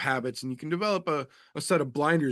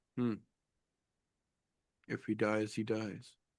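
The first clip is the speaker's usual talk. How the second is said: very quiet, stone-faced, flat deadpan monotone; 3 semitones lower, 9 dB quieter than usual. Retelling Mick Maynard's reaction while others lose their composure, imitating Mick Maynard's stone-faced monotone. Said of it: "He stays complete stone faced monotone".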